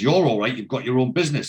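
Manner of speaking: ordinary talk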